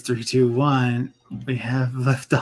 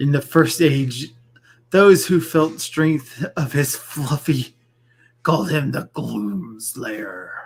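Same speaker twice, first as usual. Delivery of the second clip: put-on movie-monster voice. Playing a Pokemon game, speaking in monster voice. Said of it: "Monster Voice".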